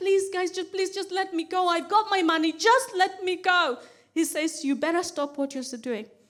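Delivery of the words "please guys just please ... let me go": crying, tearful, desperate pleading tone. Recounting being booked by a taxi driver at nineteen, retelling a tearful plea. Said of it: "I start to cry".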